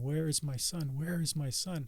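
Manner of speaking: mild, repeated yell, scream only hinted. Retelling arriving at a crash scene: retelling own screaming. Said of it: "And I just kept screaming".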